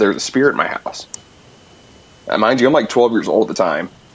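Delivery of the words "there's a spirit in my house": ordinary talk, nothing marked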